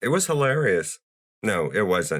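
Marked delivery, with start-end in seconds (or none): 0.0-1.0 sarcastic, high-pitched, put-on false enthusiasm. Calling a film scene funny after a recap, sarcastic. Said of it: "I'm being sarcastic".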